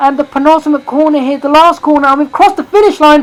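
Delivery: high, loud, frantic race commentator voice. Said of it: "I'm going absolutely mental here".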